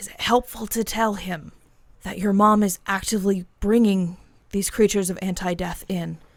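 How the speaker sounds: whispering. Voicing a character whispering a question to another character: whispering. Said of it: "she whispers to John".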